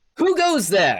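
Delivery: high gnome voice, called out loudly. Voicing a male gnome who yells out right after a female gnome, male gnome yelling out. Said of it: "the male gnome right next to her yells out".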